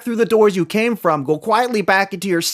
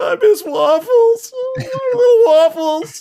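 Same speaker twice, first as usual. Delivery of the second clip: very high, full-on sobbing wail. Speaker acting out how he broke down completely: imitating someone sobbing. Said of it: "full supernova crying".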